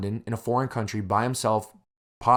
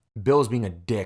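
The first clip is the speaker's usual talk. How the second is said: normal talking voice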